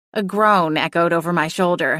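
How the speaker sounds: ordinary delivery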